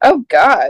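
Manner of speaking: horrified, appalled "oh god". Reacting to a movie spoiler in its content warnings: horrified "oh god". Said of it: "That sounded like a horrified oh, God".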